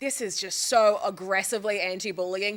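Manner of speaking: ordinary talk, nothing marked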